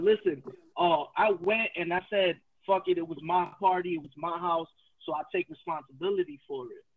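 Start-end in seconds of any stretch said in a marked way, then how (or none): none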